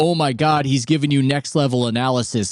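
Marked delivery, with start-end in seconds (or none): none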